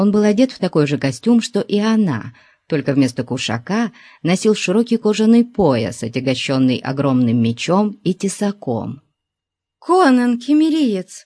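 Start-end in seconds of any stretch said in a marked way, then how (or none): 9.8-11.3 sudden outcry, pitched way up. A young woman calls to the giant following her tracks, exclaiming. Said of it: "воскликнула молодая женщина".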